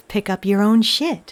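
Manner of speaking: convincing low mechanical robot voice. Quoting something that sounded dystopian, in a robot voice. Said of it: "It's a pretty convincing robot voice".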